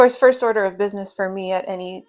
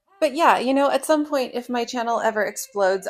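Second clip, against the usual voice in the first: ordinary delivery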